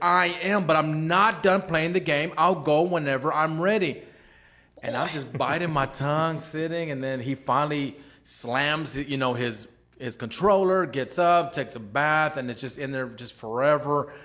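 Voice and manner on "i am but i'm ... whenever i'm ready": half-yelled, mildly raised voice. Retelling how a twelve-year-old son answered his mom: imitating a son yelling. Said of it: "he yells at her and says".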